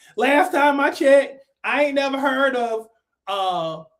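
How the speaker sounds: normal talking voice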